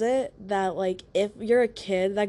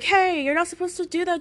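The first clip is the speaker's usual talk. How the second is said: put-on woman's voice, high and yelling; 9 semitones higher than usual. Telling a story, acting out a lady who yelled at the speaker: imitating a lady yelling. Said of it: "this lady started yelling at me".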